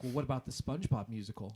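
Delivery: ordinary delivery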